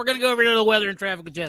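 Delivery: very high radio DJ voice. Podcast host on Talk Like a Morning DJ Day, handing over to Jesse: morning radio DJ voice. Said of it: "My brain went right on back".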